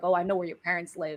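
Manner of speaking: usual speaking voice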